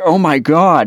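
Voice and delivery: mock alarmed, high, panicky outburst. Retelling another person's reaction to hearing the news: imitating a panicked exclamation. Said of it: "And he was panicked".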